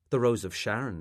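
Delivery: ordinary delivery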